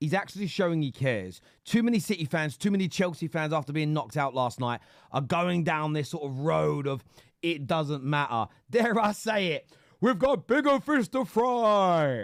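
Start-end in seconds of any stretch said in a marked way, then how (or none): 8.7-12.2 vocal fry, drawn out, high and slow. Mocking fans who say the cup doesn't matter: bad Expressions impression. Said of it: "my really bad impression of expressions doing an impression of Robbie".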